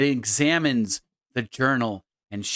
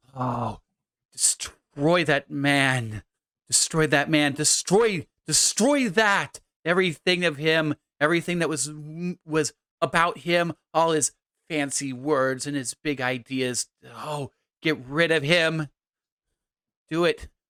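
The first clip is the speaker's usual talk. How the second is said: put-on slow, weeping, grief-stricken old woman voice; 3 semitones higher than usual. Voicing the old mother after she throws the journal down: tearful old mother. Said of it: "the old mother, / and she says, / the old mother, / tears running down".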